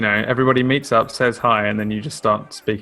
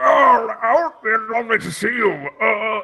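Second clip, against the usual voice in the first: put-on elderly man's voice, high and slow; 11 semitones higher than usual. Telling another player their character sounds old: imitating an old man voice. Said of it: "'Cause you're like".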